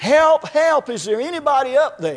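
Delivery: mild, desperate, pleading cry. Telling a joke, the speaker acts out a man hanging from a cliff, acting out desperate yelling. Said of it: "started screaming and yelling".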